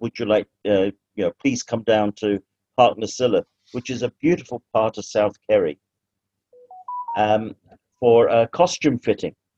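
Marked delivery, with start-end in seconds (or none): none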